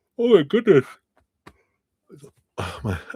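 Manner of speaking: words stretched through a yawn. Mid-conversation, the speaker yawns and then apologizes, yawning. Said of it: "I've been yawning the last few days".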